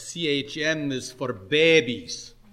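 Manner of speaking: put-on strong Scottish accent. Retelling what a man at a gathering said to the speaker, in a broad scottish accent. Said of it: "he ventured to say to me in a broad Scotch accent".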